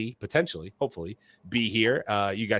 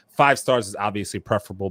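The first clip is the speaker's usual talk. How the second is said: normal talking voice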